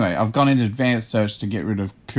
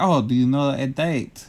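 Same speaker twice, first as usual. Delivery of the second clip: put-on speaking with a French accent; 2 semitones higher than usual. Retelling a phone call about a restaurant opening, in a French accent. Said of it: "it was a French accent".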